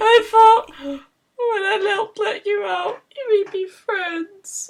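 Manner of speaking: crying, tearful voice. In a role-playing game, a player's character answers the Queen of the Storm: crying. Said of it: "he's crying".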